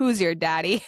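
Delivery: put-on chuckling delivery. Retelling how a carefree friend said a line to Andrew: imitating a chuckling quip. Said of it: "chuckling to himself".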